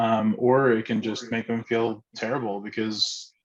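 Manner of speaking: normal talking voice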